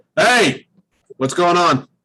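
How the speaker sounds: undeniable big presence in the voice. A character walks into the arena and greets everyone with a booming voice. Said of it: "So with a booming voice".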